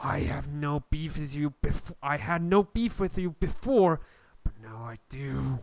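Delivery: sibilant, hissing smoke monster voice. Voicing the smoke after it shrinks to half size: hissing smoke voice. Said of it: "the smoke hisses and says".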